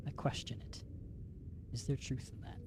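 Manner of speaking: soft, unvoiced, doubtful whisper.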